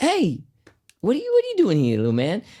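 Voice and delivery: bad put-on American accent. Retelling what Steve said on coming up to him, bad American accent as Steve. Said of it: "there's that bad American accent".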